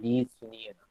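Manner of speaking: soft pleading tone.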